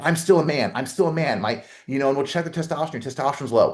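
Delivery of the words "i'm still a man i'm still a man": boastful, chest-beating macho bravado. Imitating men who pretend all is fine: imitating chest-beating bravado. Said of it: "that chest beat".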